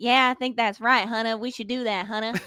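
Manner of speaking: put-on Virginia accent, good-old-boy voice. Retelling a conversation, the speaker quotes Tevin; imitating Tevin's Virginia accent. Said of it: "love your accent right now".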